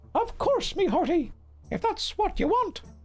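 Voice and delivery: pirate character voice. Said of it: "That's what he sounds like now".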